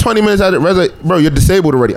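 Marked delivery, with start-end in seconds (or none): none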